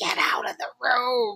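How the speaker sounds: stern, scary dragon-like mom voice. Retelling telling a child to leave the room: imitating own scary voice. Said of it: "I have to use my scary voice".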